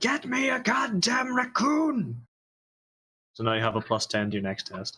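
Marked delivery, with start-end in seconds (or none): 0.0-2.3 very high, very slow, drawn-out barked yelling. Giving an order to the Eldar in the game: yelling an order. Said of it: "I'll just yell at the Eldar".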